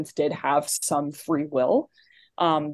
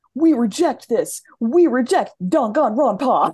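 put-on character voice, higher and louder; 8 semitones higher, 6 dB louder than usual. Acting out Little Shuichi doing his thing, every syllable stressed. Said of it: "they stress every syllable".

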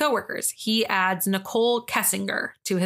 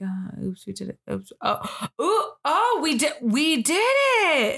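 stunned, high, swooping, very slow, long drawn-out "it"; 5 semitones higher than usual. Retelling a reaction to a shirt announcing news: imitating Chris, shocked and processing. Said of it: "Chris comes in and he's shocked".

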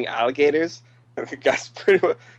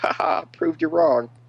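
mock jeering laughter; 3 semitones higher than usual. Retelling how the others laughed at him, imitating them laughing at him. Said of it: "they're all laughing at him like".

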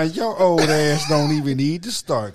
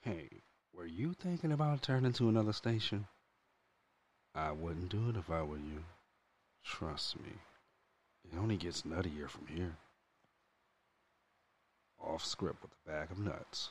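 deep, very low, very soft, hushed creepy voice; 9 semitones lower, 19 dB quieter than usual. Warning listeners not to turn to another station: put-on creepy stalker voice. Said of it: "he do sound like a perv".

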